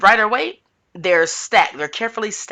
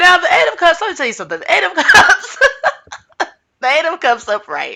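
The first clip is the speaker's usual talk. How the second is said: high, loud giggling through the words. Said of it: "I don't know why I'm laughing".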